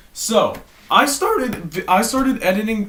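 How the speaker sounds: voice breaking, cracking up high mid-sentence. Starting the first story, the speaker's words come out with a voice crack. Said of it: "That was the worst voice crack of all time".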